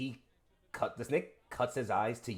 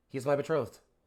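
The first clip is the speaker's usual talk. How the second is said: utterly monotone, very flat, no inflection at all; 3 semitones higher, 6 dB louder than usual. Voicing a character who answers the player: very flat delivery. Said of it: "very, very, very flatly just".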